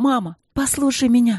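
high, loud, urgent outcry. The princess cries out again to her mother, the queen: shouting. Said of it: "снова крикнула принцесса".

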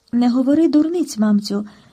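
ordinary delivery, nothing marked

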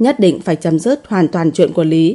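ordinary delivery

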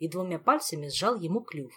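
ordinary delivery

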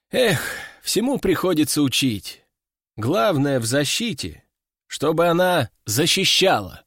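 ordinary delivery

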